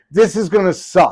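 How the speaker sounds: mock simmering near-anger, high and drawn out. Retelling Mick's warning before the audition: imitating Mick almost mad. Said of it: "he's, like, almost mad".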